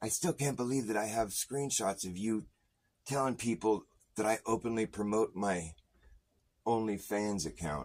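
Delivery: mock mad, aggrieved, indignant tone. Retelling an angry message someone sent: imitating someone angry. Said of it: "but he was mad".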